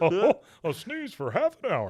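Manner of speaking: high, loud chuckling delivery, swooping up. Repeating a line with the character's chuckle: Hank Hill chuckle impression. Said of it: "That little chuckle he does".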